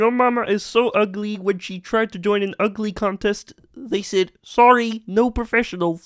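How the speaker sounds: very high, squeaky puppet frog voice. Asked for an impression, telling a joke in a Kermit the Frog impression. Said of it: "Hit us with a Kermit impression".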